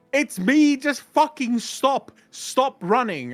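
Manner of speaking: very high, shrill, exasperated and frustrated yell. Player recounting shouting at the fleeing rogue in a game, retelling a yell. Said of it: "And I'm yelling".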